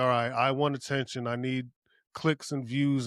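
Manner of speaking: ordinary talk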